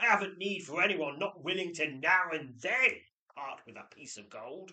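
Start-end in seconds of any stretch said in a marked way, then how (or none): 0.0-3.0 very loud, high-pitched, angry barked shout. Snapping at a visitor unwilling to part with gold, barking angrily.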